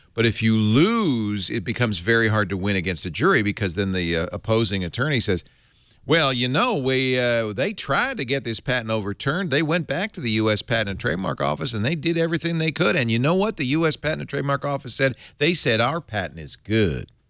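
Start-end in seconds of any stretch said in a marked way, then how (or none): 6.1-17.1 bad put-on Texas accent, pitched up. Quoting what the opposing attorney tells the jury, imitating a Texas accent. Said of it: "Is that your Texas accent?".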